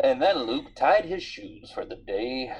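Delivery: narrator voice, like a film narrator. Showing how narrating own actions sounds: Morgan Freeman narrator tone. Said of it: "went into a Morgan Freeman kind of tone".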